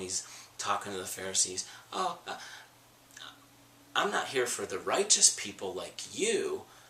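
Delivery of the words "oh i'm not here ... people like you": pointed, dripping sarcasm in a swooping sing-song. Acting out Jesus answering the Pharisees: imitating Jesus's sarcastic tone. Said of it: "you can just sense the sarcasm in Jesus' tone".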